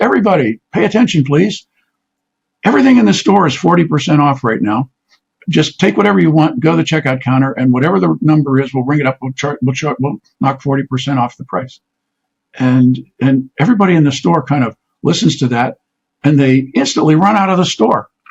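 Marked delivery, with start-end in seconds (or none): none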